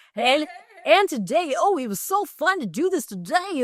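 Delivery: dated radio announcer voice. Mocking how radio guys still talk on TikTok: imitating a man's radio voice. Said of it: "the voice that they still use".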